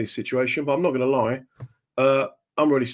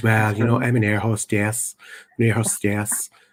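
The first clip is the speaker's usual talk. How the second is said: very soft, mild, gentle, soft-spoken voice; 4 semitones lower than usual. Retelling a compere asking a woman her job, quoting her very soft, gentle voice. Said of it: "she had one of those very gentle voices now, very very soft".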